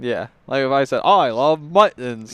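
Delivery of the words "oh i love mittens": put-on British accent, much slower. Showing how saying a whole sentence could sound offensive, in a British accent. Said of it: "doing a British accent".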